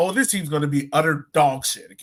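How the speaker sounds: normal talking voice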